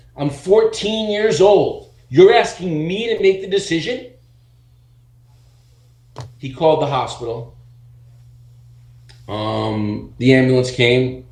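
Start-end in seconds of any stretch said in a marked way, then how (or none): 0.2-4.1 shrill, very high, outraged screaming. Retelling how, at fourteen, they screamed at Rich, retelling a scream. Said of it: "And I start screaming at him".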